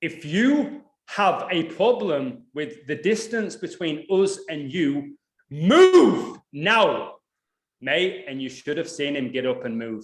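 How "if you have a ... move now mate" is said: raised, loud voice, very slow and deliberate. Retelling a warning to a stranger, imitating own raised voice. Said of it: "my voice just went up".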